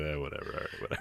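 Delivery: whispered, shrugging, totally unbothered throwaway mumble. Imitating a wrestler tying his boots before a match: imitating Shinsuke Nakamura. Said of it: "just ties his boots and goes".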